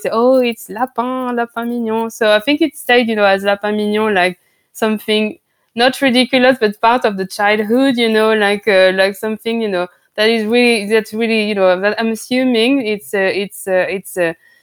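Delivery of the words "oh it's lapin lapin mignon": small, slow, drawn-out mocking, teasing voice. Retelling how a friend made fun of the rabbits: imitating a friend's little mocking voice. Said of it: "taking his little voice".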